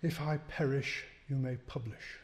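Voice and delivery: honeyed, breathy, affected tone. Quoting a man's memorable saying in a talk, in his slightly mannered, mellifluous, breathy tone. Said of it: "in that slightly mannered and rather mellifluous and breathy tone".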